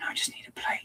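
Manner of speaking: hushed, soft whisper, barely voiced. Building a model piece by piece and looking for a part: whispering. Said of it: "Why am I whispering?".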